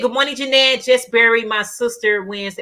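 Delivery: plain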